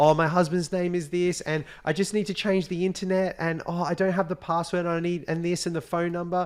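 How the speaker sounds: high, stressed, flustered pleading, play-acted. Retelling a woman on the phone pressuring a man, acting out a stressed caller. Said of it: "she's creating all this stress".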